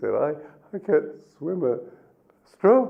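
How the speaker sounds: trembling, halting fearful voice. Telling a story of a boatman questioning a philosopher, mock-quaking voice as the philosopher. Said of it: "quaking like this".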